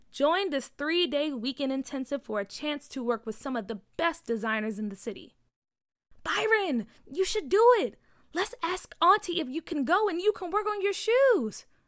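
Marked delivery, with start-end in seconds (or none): 6.2-11.6 eager, excited, pitched-up voice. Bria turns to byron and speaks, excited. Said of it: "Bria said excitedly".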